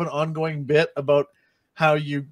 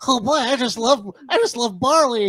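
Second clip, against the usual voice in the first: put-on gnome voice like radio announcer, much higher; 9 semitones higher, 4 dB louder than usual. Joking about gnomes, imagining one of them speaking, gnome voice like radio announcer. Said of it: "your gnome voice is the same as your radio guy voice".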